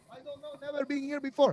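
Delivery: put-on foreign accent, broken English. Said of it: "It's just poor English".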